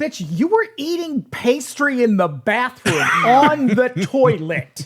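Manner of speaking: mock sarcastic, slow, indignant tone. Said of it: "it's like".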